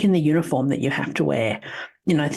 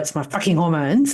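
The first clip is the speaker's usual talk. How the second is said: put-on speech through gritted teeth. Retelling an answer to the partner's question: imitating speaking through gritted teeth. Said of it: "just sort of grit my teeth and go".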